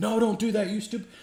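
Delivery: mock, very high-pitched, loud yell. Retelling yelling at characters on the tv: retelling yelling at the tv. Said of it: "We'd be yelling at the T V like".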